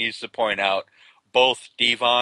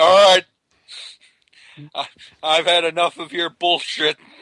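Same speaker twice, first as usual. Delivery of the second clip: put-on loud, pitched-up, drunken barfly voice; 7 semitones higher, 6 dB louder than usual. Retelling how someone called out another person, imitating drunk Jeremy Borash. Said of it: "looked like the guy at the end of the bar".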